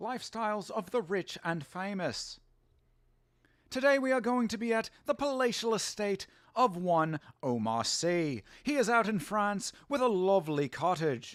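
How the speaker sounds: put-on English accent. Answering a request for an impersonation: Robin Leach impression. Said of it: "I used to do the, uh, Robin Leach pretty well".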